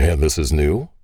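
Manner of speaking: light, playful, ribbing, teasing tone. A single father replies to a woman about their daughters, teasing. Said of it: "the single father teased".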